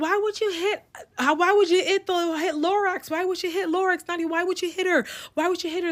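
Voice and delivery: acted, high-pitched yelling repeated over and over. Retelling how everybody reacted after the hit: imitating people yelling. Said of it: "Everybody starts yelling".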